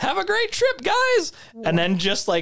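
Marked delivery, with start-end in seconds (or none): 0.0-1.3 very high, squeaky cartoon voice. Retelling a story, the speaker quotes a man who then power walks off: Mickey Mouse voice. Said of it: "Why does he sound like Mickey Mouse?".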